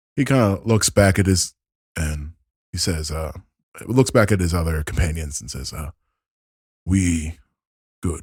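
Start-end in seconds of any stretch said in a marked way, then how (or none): 6.9-8.2 broken speech, words forced out. An acted character glances back at his companions and replies in broken Common. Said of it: "it's very broken, common".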